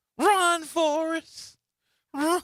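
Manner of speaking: high, slow called-out cry like a movie. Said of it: "what's the movie?".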